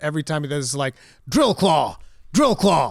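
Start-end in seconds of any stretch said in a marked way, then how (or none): 1.3-2.9 loud, swooping anime-style battle shout. Imitating Wolverine's move callout from Marvel vs. Capcom, Wolverine anime-style callout. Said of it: "he actually says it like a, an anime character".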